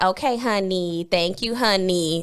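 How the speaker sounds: slow, condescending, patronizing tone. Replying to the other speaker's praise by calling them honey: patronizing. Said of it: "Patronizing me".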